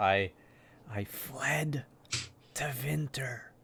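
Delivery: very slow, drawn-out half-whisper. Telling the mage in character where they fled, half-whispering. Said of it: "Why are you whispering?".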